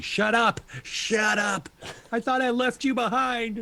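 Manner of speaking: shrill screaming at a very high pitch. In a role-play, Bonnie, one of those hearing messages in their heads, starts screaming. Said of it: "She starts screaming".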